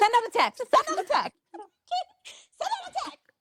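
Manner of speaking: mock repeated yelling, very high, climbing in pitch. Retelling demanding a tech from a support agent: imitating own yelling at support. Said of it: "yelling at the automated system".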